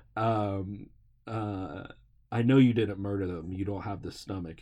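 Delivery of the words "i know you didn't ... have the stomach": ordinary delivery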